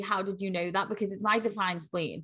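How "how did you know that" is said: ordinary talk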